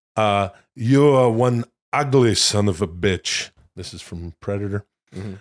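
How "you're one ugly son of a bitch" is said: slow, deliberate, heavy-handed, drawn-out action-movie tough-guy delivery. Speaker quotes a line from Predator: Arnold Schwarzenegger impression. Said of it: "trot out your Arnie impression".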